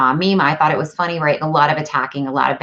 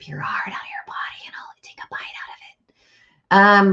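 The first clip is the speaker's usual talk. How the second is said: hushed, menacing, creepy put-on whisper; 4 semitones higher, 3 dB quieter than usual. Recalling how her old self would have answered a rude remark: mock creepy threat. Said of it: "That was a little creepy".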